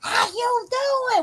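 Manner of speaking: acted out, very high, loud holler. Speaker recalls how people used to call to each other down the street; retelling a yell down the street. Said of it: "trying to see who can yell the loudest".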